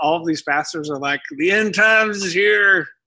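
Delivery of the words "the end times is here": put-on, slow southern drawl. Imitating pastors preaching from Revelation, in a southern redneck voice. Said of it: "I just used that southern redneck voice".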